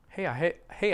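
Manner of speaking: normal talking voice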